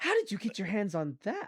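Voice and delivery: faint edge of hostility. Narrating a scene and voicing the woman who questions the listener: slightly hostile. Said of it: "that part starts to sound slightly hostile".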